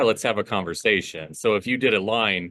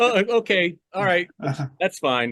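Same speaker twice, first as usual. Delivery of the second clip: exaggerated fake sobbing, very high-pitched; 9 semitones higher than usual. Acting out a pickup-line idea after the person says no: mock crying. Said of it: "fake crying".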